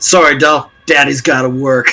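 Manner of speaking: put-on confident voice. Running out of the tavern, telling the big orc lady goodbye: confident Chad voice. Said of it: "I do not like confident Chad".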